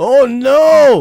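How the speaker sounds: yelling out. A man on the phone hears his maid servant has resigned, screaming. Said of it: "Why are you screaming".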